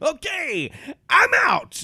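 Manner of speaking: very high, loud, swooping sing-song voice. Quoting a sitcom character while ending the podcast: George Costanza impression. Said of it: "my George Costanza impression".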